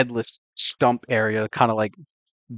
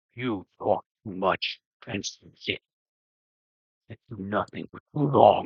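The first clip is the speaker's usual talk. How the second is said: low, soft, deep rumbling voice; 3 semitones lower, 6 dB quieter than usual. Telling how a headless body speaks to the group, in a rumbling deep voice. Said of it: "you hear a rumbling deep voice".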